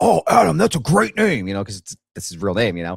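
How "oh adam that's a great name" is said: hearty booming voice, high and rough. Retelling meeting a massive man: imitating a big booming voice. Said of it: "that big booming voice".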